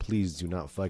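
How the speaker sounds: put-on, imitated pleading tone. Retelling a film scene where one character begs another: imitating someone pleading. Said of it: "Margot is pleading with her".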